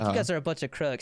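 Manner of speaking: usual speaking voice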